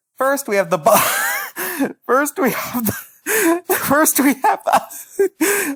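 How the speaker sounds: very high, drawn-out, giggle-broken false starts. Introducing the first strange primate while looking at its picture, laughing while talking. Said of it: "I can't look at this picture without laughing".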